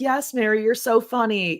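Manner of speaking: acted-out sarcastic, insincere tone. Imitating people in the comments: imitating sarcastic praise. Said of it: "saying it sarcastically".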